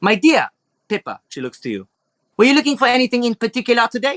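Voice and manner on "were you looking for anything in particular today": put-on French accent, higher. Voicing an elegant shopkeeper greeting customers in her shop: French-type accent. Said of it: "a French type of accent going on here".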